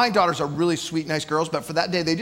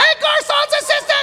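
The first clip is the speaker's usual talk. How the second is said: put-on tiniest, squeakiest kid voice, very high pitched; 5 dB louder than usual. A parent retells a daughter announcing herself with breakfast: even squeakier kid voice. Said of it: "I hear this even squeakier voice say".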